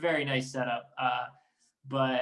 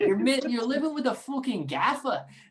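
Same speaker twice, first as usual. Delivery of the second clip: bad Irish accent, pitched very high; 10 semitones higher than usual. Quote the teammate who constantly gave you shit, in a bad Ryan Connolly accent. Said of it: "I can't even do his accent properly".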